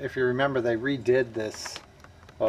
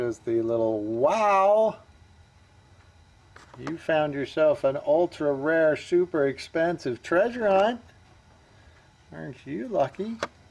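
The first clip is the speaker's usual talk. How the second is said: high, heavy, mock-impressed sarcastic irony; 5 semitones higher than usual. Showing viewers the card on the toy, sarcastic. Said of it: "I'm being sarcastic".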